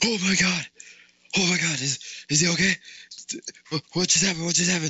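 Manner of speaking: frantic, high, rapid panicked screaming, words tumbling over. Retelling how the lifeguard reacted at the slide: imitating someone screaming in panic. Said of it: "the lifeguard turns to me and screams".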